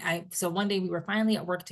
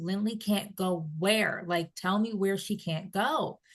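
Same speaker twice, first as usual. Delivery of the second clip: raised shouting voice; 2 semitones higher than usual. Retelling driving home, yelling out loud to herself: imitating her own past yelling. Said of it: "I'm just yelling out loud at this point to myself".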